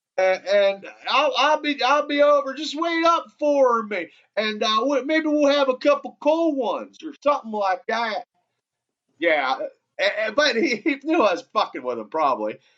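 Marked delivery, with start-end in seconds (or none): 0.2-8.3 put-on high-pitched Louisiana accent. Calling Merrill on the phone to mess with him, the speaker does a Brister impersonation. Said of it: "my Louisiana accent and impersonation of Brister".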